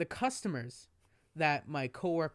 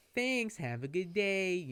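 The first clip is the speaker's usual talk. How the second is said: polite-sounding, mildly sarcastic, acted out; 4 semitones higher than usual. Retelling what the speaker said to a ranting woman, in a put-on sarcastic tone. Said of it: "I kind of said in a sarcastic way".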